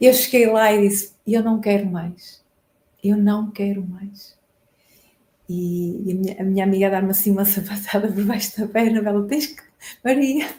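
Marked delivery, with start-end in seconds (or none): 0.0-4.4 tearful voice, about to cry. Apologizing while recounting the moment she said she'd had enough: on the verge of crying. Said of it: "ainda vou começar a chorar".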